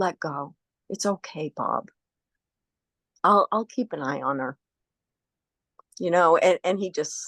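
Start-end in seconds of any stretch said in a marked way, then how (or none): 0.0-4.6 whispering. Retelling what was said at a dying man's bedside: whispering. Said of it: "I just whispered and I said".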